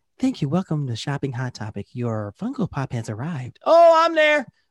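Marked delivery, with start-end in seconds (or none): 0.2-3.6 put-on young girl's announcing voice.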